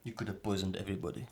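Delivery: put-on Romanian accent, let down. Retelling what a disappointed manager said: imitating a romanian manager. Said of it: "That's a good impression".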